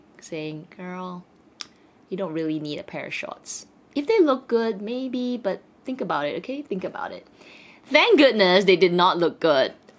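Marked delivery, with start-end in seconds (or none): 0.8-7.3 very soft, gentle, quiet inner voice. Retelling a voice in the head while trying on clothes: very soft voice. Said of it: "a very soft voice in my head".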